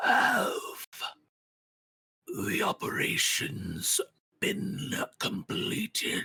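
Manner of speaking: creeping, very slow, raspy rasping voice. Narrator voicing a floating entity questioning workers: rasping voice. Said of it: "You hear his voice rasping in the darkness".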